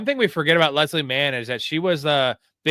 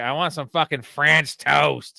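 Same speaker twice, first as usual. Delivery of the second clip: imitated drunk voice. Retelling a favorite movie scene where a drunk character demands food: imitating a drunk movie character. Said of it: "drive home when she's drunk".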